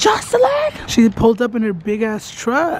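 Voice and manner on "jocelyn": very high, pitched-up mock yell. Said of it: "I'm, like, yelling".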